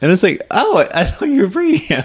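very high, cracking, breaking-up voice. Recounting being picked up by a friend who came without his husband, voice cracking. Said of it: "Why is my voice cracking?".

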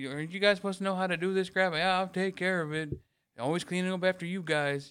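playful, joking, teasing, acted-out ribbing tone. Retelling semi-joking with someone who then yelled; retelling own joking remark. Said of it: "I'm doing it jokingly with a joking tone in my voice".

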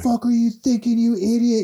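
very high, shrill, enraged screaming. Recounting a coach screaming at a new worker, reenacted screaming. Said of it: "he was just screaming at him".

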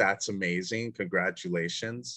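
ordinary delivery

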